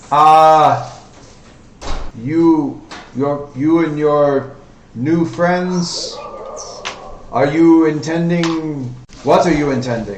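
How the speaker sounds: loud put-on Russian accent, long drawn-out "uh". Speaking in character during a scene; Russian accent. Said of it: "It's a very Russian voice".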